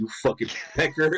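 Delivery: play-acted, totally confident, self-assured tone. Retelling a nickname given with confidence: imitating Slim's confident delivery. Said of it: "the confidence with which he said it".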